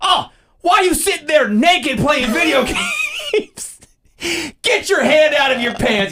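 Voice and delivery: very high, shrill, swooping, embarrassing scolding parent yell. Acting out bursting into the kid's gaming room: mock yelling embarrassing things. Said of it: "yell embarrassing ass stuff".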